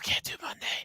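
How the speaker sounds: hushed, breathy, barely voiced whisper. Mimicking another speaker who said the line too quietly: imitating a whisper. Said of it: "really whisper".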